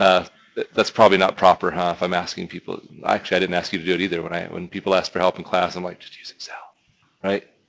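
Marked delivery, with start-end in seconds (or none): 6.0-7.4 hushed whisper, much quieter. Recalling what they tell classmates who ask for help, whispering. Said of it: "I had to whisper it".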